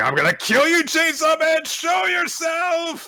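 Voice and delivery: loud, swooping, very high yell. Retelling a manga scene where a character starts yelling at someone. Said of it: "she starts yelling".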